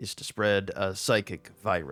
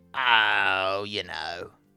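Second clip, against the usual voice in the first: put-on Cockney accent; 4 dB louder than usual. Improvising a scene, answering the question of what he's in for, in a Cockney accent. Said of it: "Now he's Cockney".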